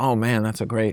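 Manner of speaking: ordinary delivery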